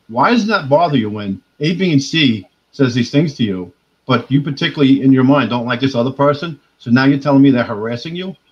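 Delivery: ordinary talk, nothing marked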